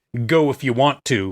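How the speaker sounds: put-on menacing tone. Retelling a movie scene, quoting a character: imitating a menacing tone. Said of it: "in a real kind of menacing way".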